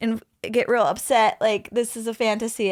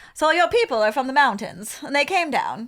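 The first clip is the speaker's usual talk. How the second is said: put-on mid-Atlantic accent; 4 semitones higher than usual. Questioning the other speaker about their family, mid-atlantic accent. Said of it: "I'm going to do my mid-Atlantic accent".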